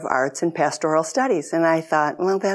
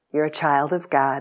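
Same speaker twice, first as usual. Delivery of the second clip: put-on professorial voice, very kind. Retelling a father's question on picking up a child: imitating a professorial but very kind voice. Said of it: "in his professorial but very kind voice".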